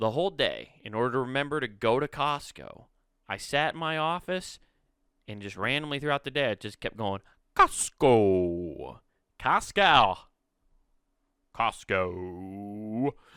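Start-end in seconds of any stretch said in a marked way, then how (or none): 7.6-13.1 goofy made-up character voice, low and drawn-out. Speaker recalls repeating a word all day in the office, weird put-on voice. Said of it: "saying Costco in the weirdest voices".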